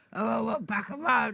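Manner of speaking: put-on rough, gruff elderly man's grumble. Voicing a cigar-smoking clown on a break: gruff old man voice. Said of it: "gruff old man".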